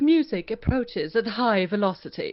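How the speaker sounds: loud, snooty, stuck-up princess voice. Given a voice type to try, reading the test sentence in a stuck-up princess voice. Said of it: "a himdari, which is like a stuck-up princess".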